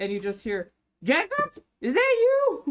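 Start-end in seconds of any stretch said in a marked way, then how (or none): 1.0-2.7 very high, slow, drawn-out hag voice. Voicing a hag calling from upstairs to a returning helper: hag voice. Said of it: "it's the hag".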